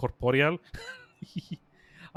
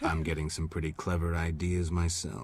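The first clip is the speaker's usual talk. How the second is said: flirty, sexy, seductive voice; 10 semitones lower, 4 dB quieter than usual. Playing a flirty scene, Geralt trying to be sexy. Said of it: "Geralt trying to be sexy".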